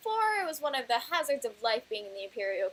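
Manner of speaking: ordinary delivery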